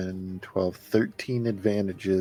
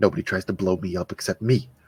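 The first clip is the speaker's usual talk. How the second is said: slightly louder voice; 5 dB louder than usual. Voicing Chav reacting after an escape: muttered under his breath. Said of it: "Chav is just gonna say under his breath".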